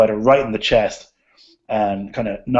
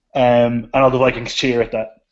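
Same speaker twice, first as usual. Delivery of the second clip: ordinary delivery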